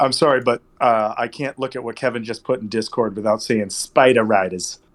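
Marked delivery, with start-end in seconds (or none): 3.7-4.8 put-on New England accent. Saying a phrase someone posted in Discord, in a New England accent. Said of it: "you can only say that with a New England accent".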